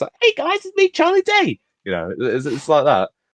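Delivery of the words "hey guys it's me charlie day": bright, high-pitched voice. Discussing voice casting for an animated film, bright Charlie Day impression. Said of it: "He's got a bright voice".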